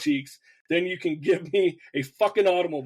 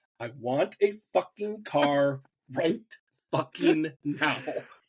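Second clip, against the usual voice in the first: ordinary talk, nothing marked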